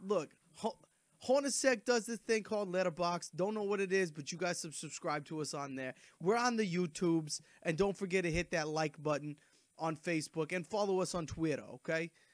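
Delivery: slight, lightly faked Boston accent. Plugging the podcast's social media pages to listeners; slight put-on Boston accent. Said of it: "trying to go a little Boston here".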